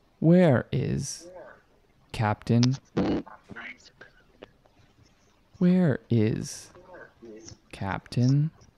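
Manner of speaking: machine-like computer voice. Game narrator voicing the ship's controls asking for the captain: ship's computer voice. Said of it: "a voice come out of the ship's controls".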